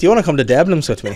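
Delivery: loud, terrible put-on Irish accent. Telling how a boy asked her to the prom, the speaker quotes him: bad irish accent. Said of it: "worst Irish accent I've ever done".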